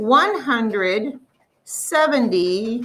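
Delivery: very slow, deliberate, each number drawn out. Explaining expanded form, saying the number aloud very slowly. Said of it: "I said it very slowly".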